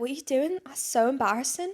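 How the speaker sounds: put-on English schoolgirl accent, nearly landed. Imitating English schoolgirls reacting to a promposal: put-on English accent. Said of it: "You're getting there with the accent".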